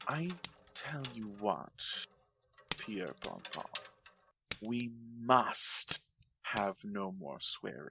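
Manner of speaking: understated, low-toned, hushed aside. The devil, recovering his composure, speaks to the hero in a low tone. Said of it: "merely saying to our hero in a low tone".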